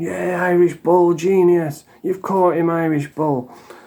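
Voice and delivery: whooping it up, cheering with celebratory praise. Retelling how Brian reacted to a comment on his live: imitating Brian cheering. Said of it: "he was dancing".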